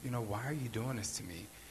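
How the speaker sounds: very soft, hushed, gentle quiet voice. Retelling what a woman said to the man choking her, in a very soft voice. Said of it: "In a very soft voice".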